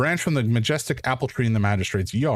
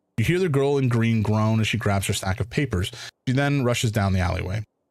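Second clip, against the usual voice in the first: ordinary talk, nothing marked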